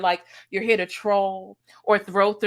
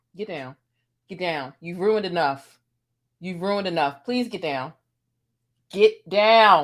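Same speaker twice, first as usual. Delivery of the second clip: firm, motherly scolding tone; 2 semitones lower than usual. Ordering the co-host to get down after the screen went blank: scolding like a mom. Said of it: "Sometimes the mom in me comes out".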